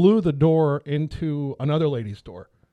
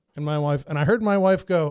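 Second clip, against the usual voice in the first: ordinary talk, nothing marked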